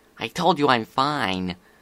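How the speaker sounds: ordinary delivery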